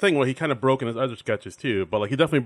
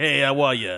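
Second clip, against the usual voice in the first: gravelly put-on comedian voice. Describing a sketch character to the others, Borscht Belt comedian voice. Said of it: "like a Borscht Belt type of like".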